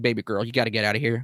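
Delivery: put-on sensitive, gentle tone. Describing how a game character talks to Claire, the speaker imitates a sweet, tender voice. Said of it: "he's very sweet and more sensitive to her".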